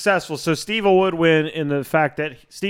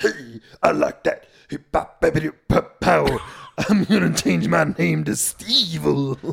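deep put-on dummy voice. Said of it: "it's very deep".

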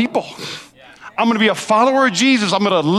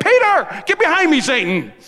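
high-pitched yell; 7 semitones higher than usual. Retelling Jesus's words to Peter; retelling a yell. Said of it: "he's yelling at his boys".

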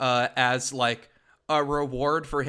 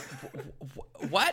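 put-on confused voice, quieter; 7 dB quieter than usual. Retelling own reaction on hearing cartoon Mario: imitating own confused reaction. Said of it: "And I'm like".

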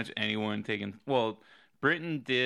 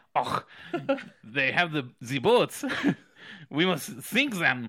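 fake, put-on German accent; 4 semitones higher, 4 dB louder than usual. Voicing the Germans in a joke about boats: put-on German accent. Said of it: "German is like".

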